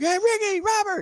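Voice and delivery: mock shrill yell, very high, shouted. Retelling trying to get wrestlers' high fives: imitating own past yelling. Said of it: "yelling at them".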